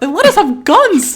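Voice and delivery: squeaked out, high and loud. Doing Mickey Mouse working at a Jersey Mike's, in a Mickey Mouse voice. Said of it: "This is my impression of Mickey Mouse working at a Jersey Mike's".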